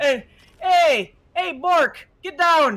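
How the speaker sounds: put-on Minnesota accent. Voicing a massive Klingon who calls to Bork: Minnesota accent. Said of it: "With a Minnesota accent".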